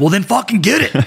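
put-on, very high, shrill yell. Retelling a reply to instructors' threat from the back of the classroom: retelling a yell. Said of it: "yell out from the back of the classroom".

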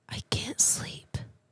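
soft, breathy, barely voiced whisper. A narrator reads a short scary story, giving her line: whispered. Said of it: "she whispered".

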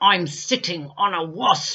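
through gritted teeth. A little boy answers a woman who asks what's wrong: through gritted teeth. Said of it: "answered between gritted teeth".

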